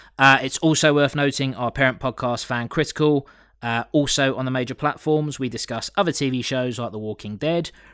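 ordinary delivery

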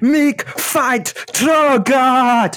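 high, loud, slow, drawn-out war cry.

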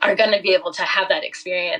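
choked up, voice catching with emotion. Imagining athletes' parents getting that experience, choked up with emotion. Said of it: "I'm getting a little choked up".

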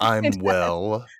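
mock-snooty, haughty voice. Speaker mocks people who answer 'I'm well', imitating a snooty tone. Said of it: "it also sounds snooty".

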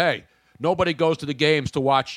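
ordinary talk

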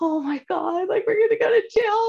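very high, frightened, rising panicked voice. Retelling sitting in an FM home during shady dealings, acting out own past fear. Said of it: "I'm like so scared".

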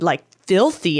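ordinary talk

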